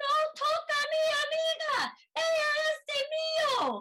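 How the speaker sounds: mock, very high, very slow, drawn-out yelling. Recalling fighting off a man grabbing a friend, retelling yelling. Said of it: "I remember that I was yelling".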